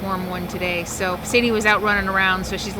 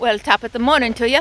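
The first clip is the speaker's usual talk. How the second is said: terrible, bad put-on Irish accent; 3 semitones higher than usual. Suddenly breaking into an Irish greeting, bad Irish accent. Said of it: "That was the worst Irish accent I have ever heard".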